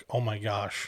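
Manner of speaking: stunned, shocked gasping exclamation. Describing how an audience reacts instead of playing along: imitating a shocked reaction. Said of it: "having this shocked".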